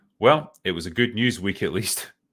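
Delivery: ordinary delivery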